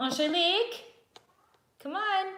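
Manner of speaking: very high, loud, calling-out yell. Speaker calls Angelique over to the screen; yelling. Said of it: "Sorry for yelling into the screen".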